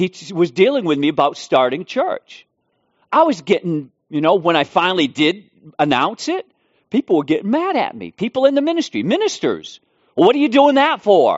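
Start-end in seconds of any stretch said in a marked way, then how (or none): 10.1-11.4 high, mock challenging, accusing tone. Retelling how fellow ministers questioned him about starting a church, mock-accusing tone. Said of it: "In that tone of voice".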